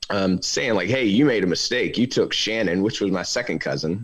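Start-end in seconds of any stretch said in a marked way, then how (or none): 0.9-2.8 subdued outburst, a yell held in. Retelling yelling at God at the lowest point: retelling a yell. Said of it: "I yelled at God".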